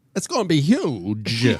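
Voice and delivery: slow, deliberate drawl, "huge" drawn out. Imagining the child of Christopher Walken and Donald Trump: Christopher Walken and Donald Trump mix. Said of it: "I think it'd go a little something like this".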